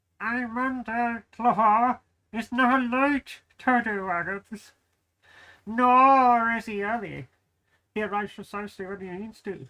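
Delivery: slow, winded, puffing, breathless parrot voice. Voicing a parrot left behind by Gandalf: out-of-breath parrot voice. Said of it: "Your parrot sounds out of breath".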